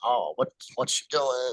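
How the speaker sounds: mocking, put-on, snide, sarcastic sneer. Retelling how the group sneered at a woman at the facility, mocking snide sarcasm. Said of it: "snidely, sarcastically".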